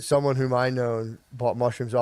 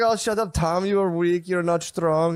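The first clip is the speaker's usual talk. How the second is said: put-on accent, spoken much slower; 5 semitones higher than usual. Retelling what a friend snapped at Tom during a lift, imitating a friend's accent. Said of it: "he had an accent".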